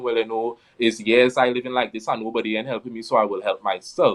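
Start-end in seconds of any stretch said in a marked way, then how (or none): none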